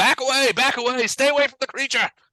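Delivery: very high, commanding yell. A game master voices a commander yelling at riders as they pass; commander yelling. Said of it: "you can hear the commander yelling".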